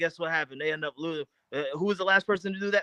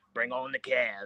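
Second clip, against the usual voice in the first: little, small movie-character voice; 5 semitones lower, 4 dB quieter than usual. Imitating Glenn on a video chat after the game: Forrest Gump voice. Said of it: "in his little Forrest Gump voice".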